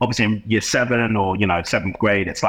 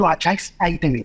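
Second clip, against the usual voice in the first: put-on pitched-up East London accent; 8 semitones higher than usual. Recalling being sent to his office, imitating Mr. Buckley's East London voice. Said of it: "talks a little bit like this".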